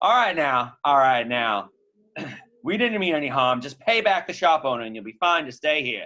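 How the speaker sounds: called out loudly over background noise. Game master voicing Hazel Lassiter in a bar scene, Hazel Lassiter shouting.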